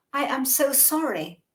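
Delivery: put-on strongly British accent, polite, slow. Retelling an apology to an attacker with a knife: very British accent. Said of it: "in a very, very British accent".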